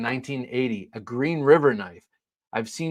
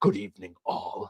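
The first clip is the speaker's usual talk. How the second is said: whispery, hushed, breathy, affected put-on character voice; 4 semitones lower, 5 dB quieter than usual. Greeting people by name while wearing a mask, in a put-on character voice. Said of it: "I don't know why I use that voice".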